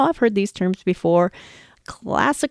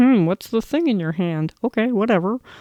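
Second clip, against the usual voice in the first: dog voice like a frog puppet. Explaining how dogs see a tool, voicing the dog: dog voice like Kermit the Frog. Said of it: "my dog voice sounds like Kermit the Frog".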